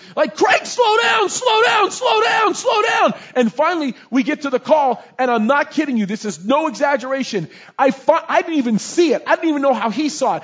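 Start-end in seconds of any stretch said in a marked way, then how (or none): 0.4-3.2 acted-out very high, shrill, exasperated, frantic repeated yell. Retelling a car ride, yelling at Craig to slow down: retelling own yelling. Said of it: "I'm just yelling at him like I want to just sock him in the face".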